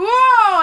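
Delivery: high, loud shocked whoa. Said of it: "I was like".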